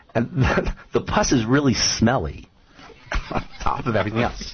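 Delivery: words broken up by laughs while talking. Describing a gross health condition to another speaker, laughing while talking. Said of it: "I'm laughing".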